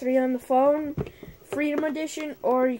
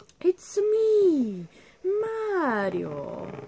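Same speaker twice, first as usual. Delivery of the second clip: put-on Italian voice, pitched much higher; 6 semitones higher than usual. Gamer mid-match tries out a voice, then asks if it's better: Mario voice. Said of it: "Is that better?".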